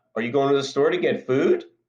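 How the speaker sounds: rising, question-like tune on "food". Showing what raising pitch at a sentence's end conveys: rising pitch on food. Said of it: "by raising the pitch of my voice at the end of the sentence".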